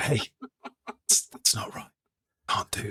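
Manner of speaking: soft, close whisper right at the ear. Acting out telling an opponent a card is not legal: acted-out whisper. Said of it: "just gonna whisper in, in their ears".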